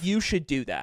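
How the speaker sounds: play-acted, completely earnest, dead-serious, no joking. Retelling what a stranger in the bathroom line said: imitating a dead-serious tone. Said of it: "she's like, dead ass".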